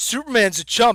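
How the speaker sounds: ordinary delivery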